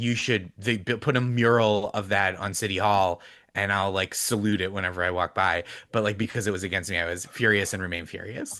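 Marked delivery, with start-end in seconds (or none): none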